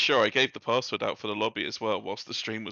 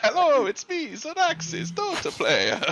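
put-on Italian accent, very high, swooping, sing-song; 3 dB louder than usual. A player introduces their character to the table, as Zoraxis with Italian accent. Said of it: "Why is he Italian?".

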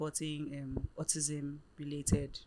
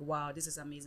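normal talking voice

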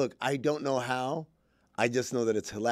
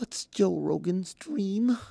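fake, pitched-up, overly emotional heartfelt tone; 7 semitones higher than usual. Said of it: "I'm going to hit an emotional note here".

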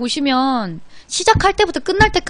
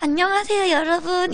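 voice lifted slightly, one tone higher; 4 semitones higher, 4 dB quieter than usual. Recalling early broadcast days, greeting viewers with voice one tone higher. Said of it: "약간 목소리 톤이 한톤 올라가서 ... 이렇게 했었던 거지".

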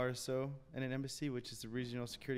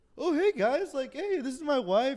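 put-on very high, loud, drunken slurred speech; 13 semitones higher, 12 dB louder than usual. Retelling what a man said to them, imitating slurred words. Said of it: "he's like slurring his words".

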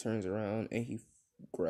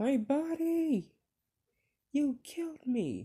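mock very high, stretched-out screaming; 4 dB louder than usual. Retelling a scene where a character is killed, retelling a character screaming. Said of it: "he's screaming, like".

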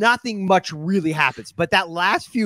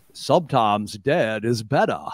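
put-on deep, low-pitched voice in a Maine accent; 8 semitones lower than usual. Recalling a favorite episode moment, speaker quotes the actor: John McLean's Maine accent. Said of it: "with the proper main accent".

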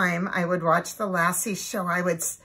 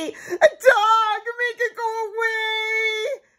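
shrill, high, long-drawn, frightened wailing cry; 5 dB louder than usual. Reading a story aloud, Susan sees Lassie by the car, crying out. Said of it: "cried Susan".

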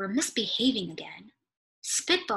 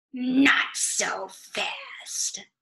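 nasty, unpleasant hissed whisper; 3 semitones higher than usual. Reading a story, the new teacher stops the kids: hissing, unpleasant voice.

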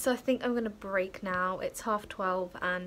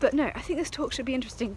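out of breath, winded, breathless, faster pace; 3 semitones higher, 4 dB louder than usual. Speaker walking across town, running late to a talk, out of breath. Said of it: "I'm out of breath".

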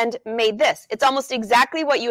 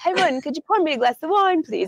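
put-on English costume-drama, period-drama accent; 5 semitones higher than usual. Recalling asking for wine in the kitchen, in a Downton Abbey accent. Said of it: "I would have an accent like this".

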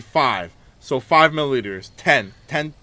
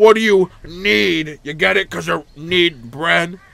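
loud, chirpy, cheery character voice, "need" stretched; 4 semitones higher, 5 dB louder than usual. Voicing a talking bread character in a game, talking bread character voice. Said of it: "Everyone's secret favorite chompette bread".

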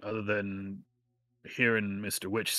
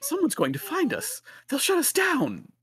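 shrill put-on voice, very high, loud and swooping; 7 dB louder than usual. Switching between characters' voices, in a high-pitched Mr. Light voice. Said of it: "he once again switches to the high-pitched voice of Mr. Light".

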